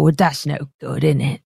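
burly, brutish, grumbling half-orc voice. Game master voicing a burly half-orc who pushes past the players: scowling burly half-orc. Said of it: "the burly half-orc just kind of like scowl".

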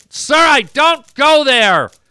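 voice lifted, loud. Denying going to a bar: raised voice. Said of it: "if you're gonna raise your voice to me".

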